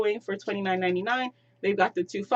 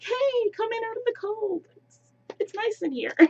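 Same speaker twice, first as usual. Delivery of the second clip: tiny, very high-pitched little voice; 13 semitones higher than usual. Imagining a penguin decoration by the door greeting visitors, Piper the penguin's little voice. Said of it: "there's that little voice like".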